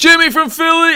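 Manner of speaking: very high, loud yell.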